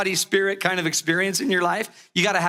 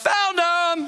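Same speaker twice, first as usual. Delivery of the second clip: play-acted, shrill, very high, sudden yell; 11 semitones higher than usual. Telling how he found his lost item, the speaker reenacts his yell: retelling his own yell. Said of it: "And I just yelled".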